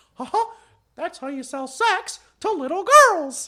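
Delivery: very high, squeaky cartoon voice. Retelling a South Park scene, do a Mickey Mouse impression. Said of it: "my Mickey Mouse impression".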